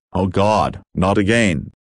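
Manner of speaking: usual speaking voice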